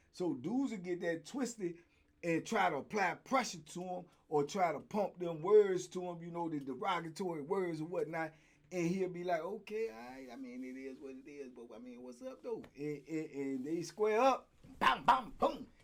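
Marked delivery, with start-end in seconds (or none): 9.5-12.7 low, soft, very hushed, very quiet voice. Retelling the fighter's reply to men insulting him, imitating someone talking low and soft. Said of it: "He talked low and soft".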